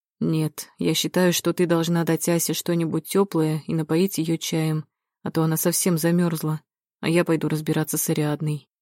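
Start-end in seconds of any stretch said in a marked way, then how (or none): none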